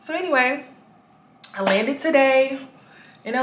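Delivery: talking while chewing gum. Talking on camera to viewers about landing in LA, talking while chewing gum. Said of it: "Let me stop chewing this gum".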